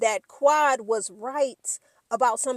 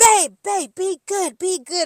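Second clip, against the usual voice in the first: high, in-your-face pleading scream at close range; 7 semitones higher, 6 dB louder than usual. Retelling a reality show scene, imitating someone screaming. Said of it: "And he's in her face".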